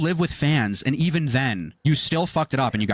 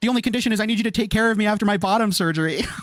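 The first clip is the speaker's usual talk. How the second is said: mock begging tone, higher; 7 semitones higher than usual. Mocking another speaker's search for a roommate: imitating someone begging.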